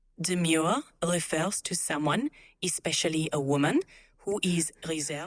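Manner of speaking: put-on German accent. Asked to repeat a definition in a german accent, the assistant repeats it in a german accent. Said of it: "but in a German accent".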